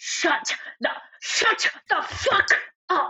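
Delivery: mock forceful shout, spat out with spit. Retelling how a character turns and silences Marco: spitting retelling of a yell. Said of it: "With spit".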